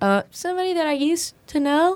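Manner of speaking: put-on high, wide, small little-kid voice.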